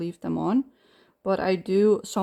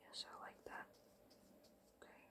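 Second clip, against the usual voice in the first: very quiet, breathy, hushed whisper, almost all breath. Speaker adds color to a big flower, whispering. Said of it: "Don't know why I'm whispering".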